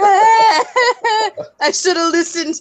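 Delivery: dramatic, high, slow, drawn-out lament.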